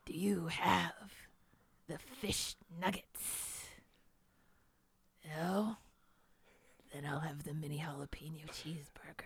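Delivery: deep, threatening villain voice. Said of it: "my imitation of Heath Ledger's Joker".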